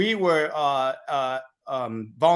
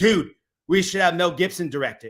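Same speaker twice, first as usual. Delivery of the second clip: normal talking voice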